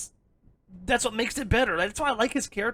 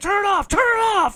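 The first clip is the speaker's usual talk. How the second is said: high, loud, panicked shout. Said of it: "she's like".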